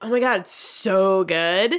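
slow, ultra sarcastic, put-on dripping enthusiasm. Retelling how a sous chef answered how they were: imitating ultra sarcastic tone. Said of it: "ultra sarcastic".

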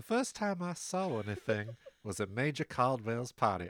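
put-on accent of a genteel old South lady. Doing an impression of Mrs. Caldwell for the others; Mrs. Caldwell Southern belle voice. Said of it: "she's a Southern Belle".

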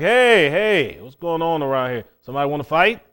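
put-on loud, brash tone, spoiling for a fight. Acting out the old man sticking his head up: voicing the old man picking a fight. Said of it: "that old man sticks his head up and he's like".

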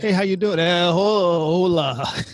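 very slow, broken Spanish with hola drawn out slowly. Retelling a comedian's joke about an actor greeting a Mexican guy: Steven Seagal's bad broken Spanish. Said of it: "try to put on badly broken Spanish".

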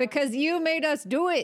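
playful shouting, high-pitched yell. Blaming another speaker for making them fight it: yelling. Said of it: "who are you yelling at".

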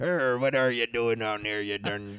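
hammy pirate accent, very deep and slow. Showing what an over-the-top pirate accent would be, in a Pirates of the Caribbean pirate accent. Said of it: "like in Pirates of the Caribbean, it's like".

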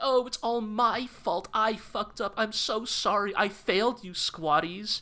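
high, slow, tearful voice.

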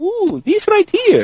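put-on Middle Eastern accent. Retelling a liquor store clerk's reply: put-on Middle Eastern accent. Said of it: "I'm gonna give him one anyway".

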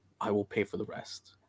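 speaking in a whisper. Nudging a companion and shaking a coin purse, whispering in character. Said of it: "kinda whisper to him".

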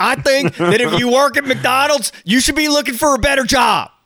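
high, put-on Florida accent. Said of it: "[name], your Florida's showing".

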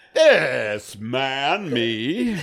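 put-on mock Southern gentleman accent. Imagining the other speaker representing himself in court: put-on Southern gentleman voice. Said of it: "like a Southern gentleman going".

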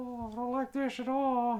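squeaky, very high-pitched little cat voice. Playing the cat getting its fur motorboated: voicing the cat Carlos. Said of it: "that's exactly what he sounds".

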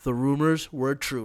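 put-on dry, flat, expressionless deadpan delivery. Mimic the man you are tired of seeing as he speaks to the camera, imitating someone deadpan. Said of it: "looking deadpan to the camera and saying shit like".

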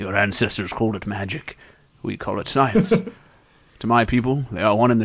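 lofty, proud, proclaiming heroic voice. Riffing on magic versus science, the speaker does a Thor impression. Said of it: "I didn't know [name] had a Thor impression".

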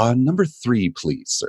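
put-on polite old-man voice, high and swooping. Retelling how a trivia player politely picked his question: imitating a polite old guy. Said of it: "he was always so polite".

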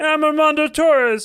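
put-on frog puppet voice. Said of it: "That was like a Kermit the Frog".

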